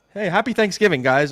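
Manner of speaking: happy-go-lucky, bright, high and loud delivery. Retelling press conference openings, imitating Nathaniel Hackett all happy-go-lucky. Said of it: "he'd be all happy-go-lucky".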